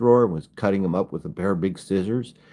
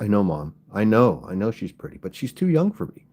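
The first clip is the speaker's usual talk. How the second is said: usual speaking voice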